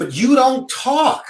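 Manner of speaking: put-on encouraging voice, pitched very high. Retelling what she said when the speaker wanted to be a sports journalist, imitating an encouraging voice. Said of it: "in her encouraging voice".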